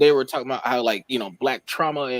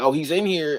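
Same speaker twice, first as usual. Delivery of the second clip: put-on light, mild screaming cry; 3 semitones higher than usual. Retelling a movie scene where she saw him in the room: imitating someone screaming. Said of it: "she was screaming, like".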